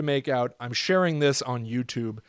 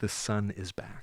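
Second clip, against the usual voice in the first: lower, quieter whisper; 5 semitones lower, 8 dB quieter than usual. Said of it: "You can hear a whispering".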